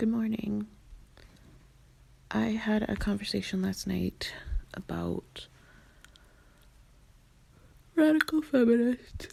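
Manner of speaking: croaky, hoarse voice, sounding freshly woken. Speaker who just woke up greets listeners, in a croaky just-woke-up voice. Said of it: "so my voice is croaky".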